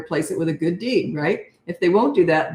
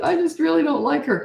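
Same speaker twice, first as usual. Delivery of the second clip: put-on acted, very high, teary, crying toddler voice; 10 semitones higher than usual. Imitating a three-year-old talking about her sister: imitating a crying child. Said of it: "like she's crying and she's not mad".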